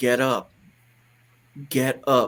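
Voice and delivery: put-on very slow, rhythmic, authoritative voice. Retelling what a man in a vision told him: imitating an authoritative voice. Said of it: "In this authority voice".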